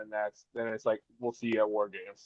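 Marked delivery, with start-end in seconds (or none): none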